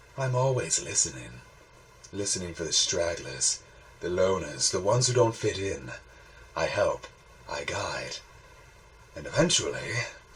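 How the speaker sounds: quiet, soft, coaxing voice with a menacing edge. Reading fiction aloud, a voice in the mist speaks again, more gently now. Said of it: "more gently now".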